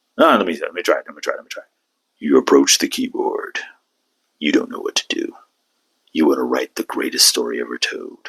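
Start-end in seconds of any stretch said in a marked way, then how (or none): 2.2-8.3 slow, rough, gravelly, weighty movie-trailer narrator voice. Setting up a writing scenario for listeners, in a movie voice. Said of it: "I was trying to do my movie voice".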